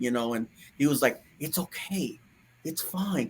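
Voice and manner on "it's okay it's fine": soft, slow, gentle, caring, loving tone. Retelling what a comforting voice said to the speaker: imitating a loving, caring voice. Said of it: "a loving, caring, wonderful way how he was, how he talks to you".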